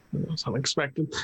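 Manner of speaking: usual speaking voice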